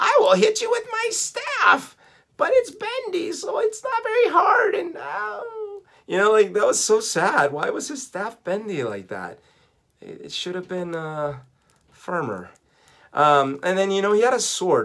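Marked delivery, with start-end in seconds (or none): 0.0-4.7 strange, weird cartoon voice, pitched way up high. Recalling playing with the cartoon's characters, doing a weird cartoon villain voice. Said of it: "he had a weird voice in the cartoon".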